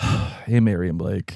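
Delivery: imitated defeated tone. Imitating callers' voicemail greetings: imitating a defeated tone. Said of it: "It's like, defeated".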